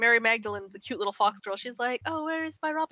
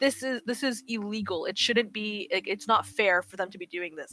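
normal talking voice

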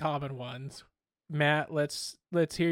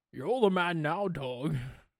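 very slow delivery, each word drawn out long; 2 semitones higher than usual. Doing a Sean Connery impression in an impression-off. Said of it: "Ooh, that's good".

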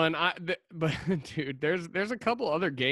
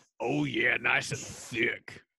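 low, deep, over-the-top wrestler voice; 4 semitones lower than usual. In a chat about beer, answer in a Macho Man Randy Savage voice. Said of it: "you turned into Macho Man Randy Savage".

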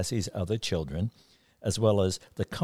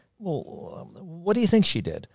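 pensive, anxious, worried, very high, swooping pitch; 9 semitones higher than usual. The youngest sister asks her sister a question, pensive and worried. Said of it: "Pensive and worried".

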